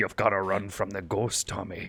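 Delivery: put-on almost Irish accent. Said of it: "almost Irishy".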